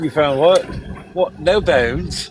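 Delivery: put-on English-sounding British accent. Retelling lines from an old horror movie: British accent. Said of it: "With that British accent".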